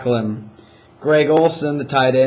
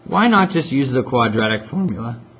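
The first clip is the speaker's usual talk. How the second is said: voice cracking, breaking mid-line. Explaining which method to use for an equation, with a voice crack. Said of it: "voice crack".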